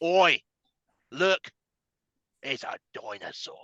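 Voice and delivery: breathy, drawn-out whisper. Joking about a dull book, doing a Steve Irwin impression. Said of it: "Steve Irwin came into my mind".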